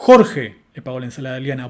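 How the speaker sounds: strong, emphatic contrastive focus stress on Jorge. Repeating an example of contrastive focus so it comes across: strong stress on Jorge. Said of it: "el tono con el que pronuncié el foco contrastivo que vimos recién es más fuerte".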